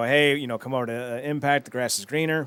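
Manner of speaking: ordinary talk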